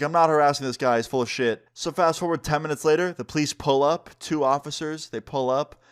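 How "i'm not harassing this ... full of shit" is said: ordinary talk, nothing marked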